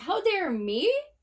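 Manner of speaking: high, squeaky, stunned, incredulous tone. Retelling own reply to an angry phone call: retelling own high-pitched voice. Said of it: "my voice was so high-pitched".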